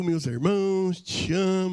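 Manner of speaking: mock syrupy, sugary put-on tone. Act out how he addresses his brothers before a sudden warning, imitating a syrupy tone. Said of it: "ele vem meu meloso".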